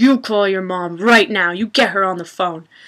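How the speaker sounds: seething, livid, furious tone. Retelling how the mom reacted to the news: imitating a livid mom. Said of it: "my mom was just livid".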